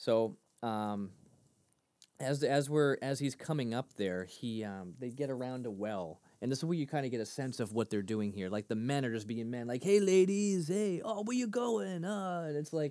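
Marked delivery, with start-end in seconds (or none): 9.8-12.4 very high, hollering voice. Acting out men calling to women at a well: Cheech voice. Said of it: "it sounded like Cheech".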